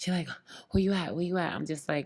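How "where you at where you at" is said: put-on breathless panting, higher. Retelling a mother's call urging the speaker home: imitating someone panting. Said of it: "she sounded like she panting".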